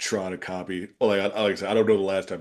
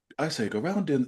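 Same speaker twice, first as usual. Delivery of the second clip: attempted English accent, raised pitch; 7 semitones higher than usual. Put on the spot, the speaker tries the accent: attempted Stewie English accent. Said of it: "can I actually do it right now?".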